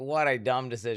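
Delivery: ordinary talk, nothing marked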